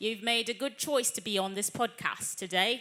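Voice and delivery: put-on Cockney accent.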